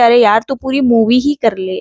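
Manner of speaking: plain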